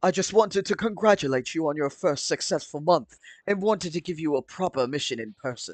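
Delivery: acted, commanding robot officer voice. Reading a Transformers story aloud, voicing the commander: Shockwave voice. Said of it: "my shockwave voice".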